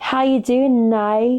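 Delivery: fake, bad Australian accent, slow and drawn out. Retelling a viral greeting from the Australia one: bad Australian accent.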